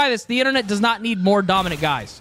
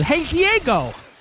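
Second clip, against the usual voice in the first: put-on cartoon character voice; 8 semitones higher than usual. Talking to chat, doing an impression: Sid the Sloth voice. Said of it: "my Sid the Sloth impression".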